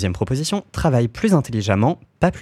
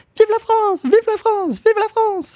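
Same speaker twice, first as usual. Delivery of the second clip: piercing, very high-pitched scream; 4 dB louder than usual. A narrator reads a man's cry, a very high-pitched shriek. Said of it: "criant d'une voix suraiguë".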